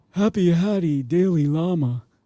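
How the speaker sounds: put-on Sicilian accent. Retelling what a man kept saying to them; imitating his Sicilian accent. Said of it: "with a bit of a you know, Sicilian accent".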